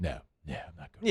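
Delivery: soft, hushed, kept under the breath. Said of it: "doing the Muse thing".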